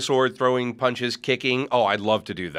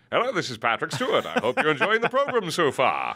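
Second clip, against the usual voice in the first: swooping, animated voiceover with wide pitch swings; 4 semitones higher than usual. Describing a Family Guy cameo, the speaker does a Patrick Stewart impression. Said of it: "you hear Patrick Stewart going".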